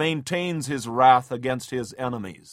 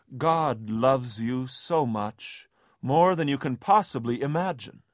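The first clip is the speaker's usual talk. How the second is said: put-on sweet tender voice, slower pace. Describing a typical Touched by an Angel scene, reassuring someone in Monica's sweet, tender voice. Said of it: "in her sweet, tender voice".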